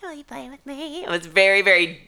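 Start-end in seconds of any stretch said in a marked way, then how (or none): 0.0-1.0 put-on very soft, high, hushed, creepy, babyish doll voice. Imitating a talking doll's voice: imitating a babyish, scary doll voice. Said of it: "very babyish and scary".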